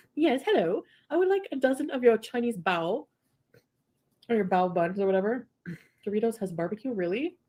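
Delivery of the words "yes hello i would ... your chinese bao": put-on British accent. Retelling calling in a food order, speaker puts on a British accent. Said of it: "I called in with a British accent to order".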